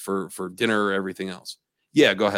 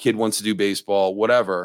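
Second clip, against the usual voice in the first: normal talking voice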